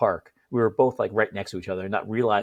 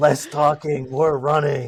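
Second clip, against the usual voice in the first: loud, gravelly, pitched-up yell; 6 semitones higher, 6 dB louder than usual. Retelling how a man yelled at them in Williamsburg, imitating a gravelly yell. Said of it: "in his gravelly voice".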